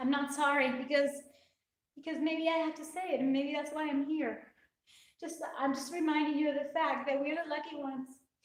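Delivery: weeping, tearful, crying through the words. A speaker closing remarks to listeners, crying while speaking. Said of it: "I just can't stop crying".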